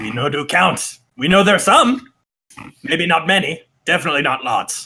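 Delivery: put-on goblin voice, like several goblins. Voicing goblins answering a question about how many are unhappy: goblin voice. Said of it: "The goblins sort of look around".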